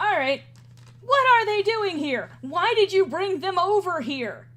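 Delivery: loud, high-pitched angry outburst.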